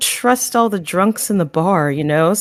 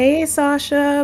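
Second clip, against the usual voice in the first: careful, unobtrusive, discreet tone, pitched up; 6 semitones higher than usual. Playing a character greeting someone busy in a quiet room: said really quietly. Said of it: "really quietly".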